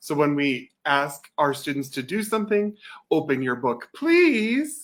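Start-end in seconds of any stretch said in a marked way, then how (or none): 3.1-4.8 cheerful, happy, high sing-song tone. Speaker modeling how to ask students to do something, happy tone. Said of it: "modeling that happy tone".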